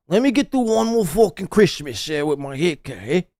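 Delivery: mock mobster-style Italian accent, put-on. Mocking the other speaker's way of talking: mocking Italian mobster voice. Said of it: "Why is he talking like a fucking Italian?".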